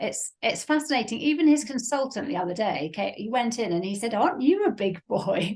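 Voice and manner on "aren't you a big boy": put-on play-acted patronizing toddler-talk. Retelling how a consultant spoke to a teenager: imitating talking like to a toddler. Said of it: "talk like a toddler".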